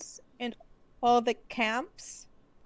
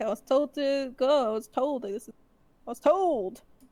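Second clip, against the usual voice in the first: put-on slow, dogged, repeated insistence. Retelling how a guard turns Sandor away, imitating him insisting. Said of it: "But Sandor keeps insisting".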